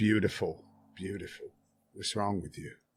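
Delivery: hushed whisper. Voicing a character running over to a deactivated robot: whispering. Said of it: "you almost hear him whispering".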